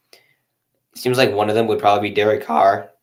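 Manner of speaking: voice cracking and breaking mid-sentence. Speaker chatting casually, voice cracking. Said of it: "My voice cracked".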